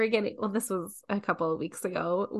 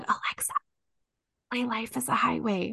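soft, quiet, hushed whisper; 3 dB quieter than usual. Retelling a request to alexa so her husband wouldn't hear; retelling a whisper. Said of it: "so I whispered it".

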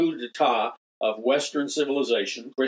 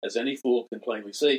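ordinary delivery

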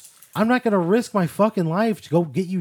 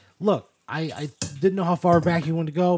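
plain

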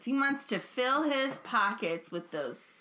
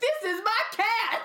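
very high put-on voice, drawn out slowly; 11 semitones higher, 4 dB louder than usual. Recalling a comedy sketch, imitating Tracy Morgan as Brian Fellows. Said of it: "Tracy Morgan would do Brian Fellows".

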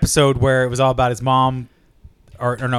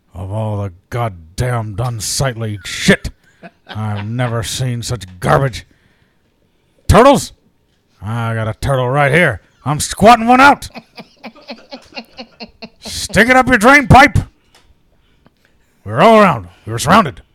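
wild, rambling, big, loud and swooping delivery; 6 dB louder than usual. Taking a prompt from the others, a speaker does a Hunter S. Thompson impression. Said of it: "Give me a movie to put Hunter Thompson".

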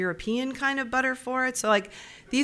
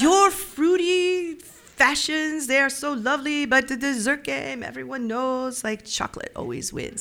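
English spoken with a put-on French accent; 4 semitones higher than usual. Retelling own thoughts at a dessert table: English with a French accent. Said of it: "when I think to myself, I speak French".

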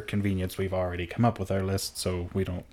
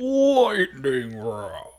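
boomy voice, much higher and louder; 5 semitones higher, 5 dB louder than usual. Repeating the segment name once more as asked, in a boomy voice. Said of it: "Go do it again".

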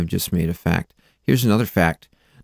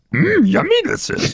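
put-on creature voice, much higher. Urged by the others to show his best impression, he does a Yoda impression. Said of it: "His Yoda impression's the best one".

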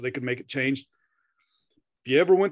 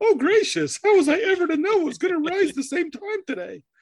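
high, loud, overacted dying scene voice. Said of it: "little maybe overacting there in the death scene".

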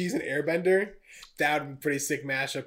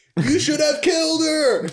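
imitated shout, higher and louder; 13 semitones higher, 10 dB louder than usual. Acting out two characters shouting a line together: imitating a shout together. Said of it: "They coordinated it to shout together".

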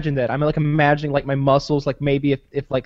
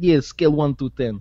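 imitated Russian accent. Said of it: "Kyle does a good Russian accent".

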